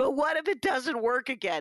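put-on tearful, crying voice. Retelling what they said to a woman offering to walk back with them, mock-crying. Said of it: "I didn't use that tone of voice".

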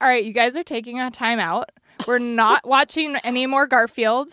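ordinary talk

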